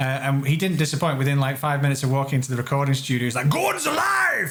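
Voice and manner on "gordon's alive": put-on very high, full-throated, blaring shout. Retelling meeting Brian Blessed in the recording studio: imitating Brian Blessed shouting. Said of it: "he's shouting out".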